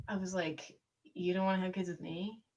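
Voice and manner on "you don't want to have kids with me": acted, soft, pitiful, pathetic little pleading voice. Retelling what she said back to him while holding back tears, mock-pathetic. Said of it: "I just said all pathetic".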